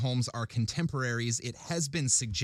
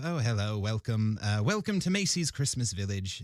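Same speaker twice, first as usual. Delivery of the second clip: put-on English-accented voice; 2 semitones lower than usual. Retelling how they greeted visitors at macy's christmas village, english accent. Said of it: "I'd do sort of a, um, uh, an English accent".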